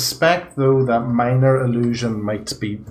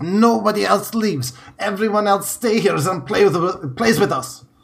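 blustery, breath-held, pitched-up angry outburst; 9 semitones higher than usual. Voicing a red-faced character with bunched fists: blustery angry character. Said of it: "blustery character ... bunching up his fists".

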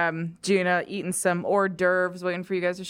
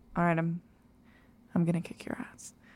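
put-on quiet voice, much quieter; 6 dB quieter than usual. Retelling a scene, quoting Gina's threat, Gina talking quietly. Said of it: "Gina quietly goes".

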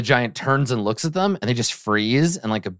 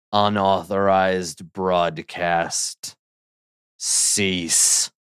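rough, rasping, raspy giant voice; 3 semitones lower than usual. Voicing the giant answering Torgor, in a raspy giant voice. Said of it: "in a sort of raspy voice".

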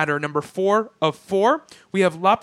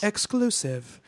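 bored, disaffected female announcer voice; 7 dB quieter than usual. Performing a sound effect for the word exclusive: disaffected female voice. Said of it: "a really disaffected female voice".

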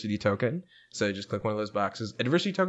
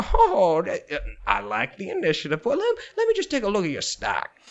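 put-on old man voice, lower pitch; 6 semitones higher, 4 dB louder than usual. The only supervisor, Old Man Archie, answers a player character: Old Man Archie voice. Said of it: "you hear the voice of your only supervisor, Old Man Archie".

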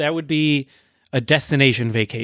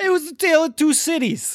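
high mock Cockney accent. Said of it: "say some of his book titles in that accent".

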